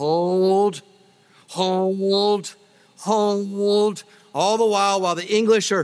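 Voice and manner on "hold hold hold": high, drawn-out Scottish yell, each hold stretched. Retelling the scene where Wallace's men face the approaching English army: imitating Wallace yelling, Scottish accent. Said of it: "in his epic Scottish accent, Wallace yells".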